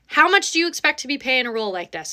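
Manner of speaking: ordinary talk, nothing marked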